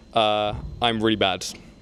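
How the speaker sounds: ordinary talk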